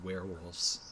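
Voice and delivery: soft, hushed half-whisper, barely there. Voicing a big ugly figure in a hushed talk: half-whispering softly. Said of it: "just kind of whispers softly".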